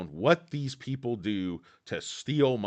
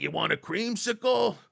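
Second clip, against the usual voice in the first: very high, put-on New York cab-driver accent; 13 semitones higher, 3 dB louder than usual. Retelling the ice cream truck driver offering a substitute bar: New York cab driver voice. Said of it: "Sounded like a New York City cab driver".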